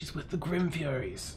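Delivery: quiet muttered whisper under the breath. Voicing a young dwarf guard telling a coworker: whispering under his breath. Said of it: "he kind of whispers, like, under his breath".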